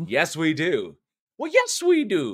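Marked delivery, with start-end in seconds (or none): 1.4-2.3 very high, slow, fake Irish accent. Agreeing with the other speaker about the horror movies, in a put-on Irish accent. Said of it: "that's the accent for next month. That's the accent for St. Patty's".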